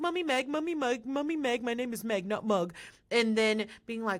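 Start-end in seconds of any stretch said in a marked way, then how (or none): 0.0-2.7 derisive, scornful put-on voice. Retelling how a contestant acted fake-nice: imitating Meg. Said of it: "trying to be like".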